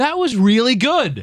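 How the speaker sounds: high, slow, slightly surprised tone.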